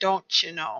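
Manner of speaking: whispered, hushed put-on Minnesota accent. Speaker remarks on the shimmer, then adds a line in minnesota accent. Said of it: "That's my Minnesota accent".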